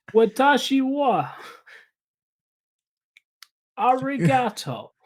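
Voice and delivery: put-on Brooklyn accent. Joking about people in Little Brooklyn, Japan: Japanese in a Brooklyn accent. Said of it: "speaking Japanese in, like, a Manhattan accent".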